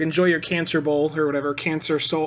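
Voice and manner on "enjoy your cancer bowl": usual speaking voice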